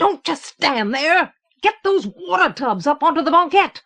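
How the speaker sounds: high, raging, desperate, furious roaring bellow. A man shouts orders at the men below him: furious roar. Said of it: "Suddenly furious, he roared".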